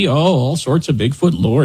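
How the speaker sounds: put-on Upper Midwest accent. Talking about Bigfoot lore in Michigan's Upper Peninsula, in a Fargo-style accent. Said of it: "Did I sound Fargo-y enough?".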